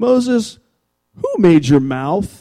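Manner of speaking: pointed, sarcastic, swooping put-on tone. Retelling god's question to moses: imitating a sarcastic tone. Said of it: "God sarcastically says to Moses".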